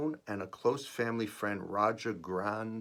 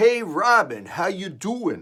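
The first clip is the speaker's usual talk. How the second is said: put-on Italian accent, shrill, very high and booming; 10 semitones higher, 12 dB louder than usual. Reading aloud an email greeting to a friend: Italian accent. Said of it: "in an Italian accent".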